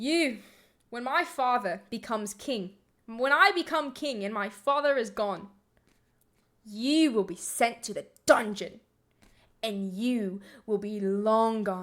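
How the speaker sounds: rusty, attempted put-on British accent. A speaker, asked to read a line in a British accent, tries an attempted British accent. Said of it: "would you use like a British accent for that".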